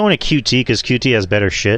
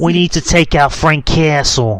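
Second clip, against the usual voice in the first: high, slow, put-on 1930s gangster voice. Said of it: "do your best, uh, Jigsaw impersonation".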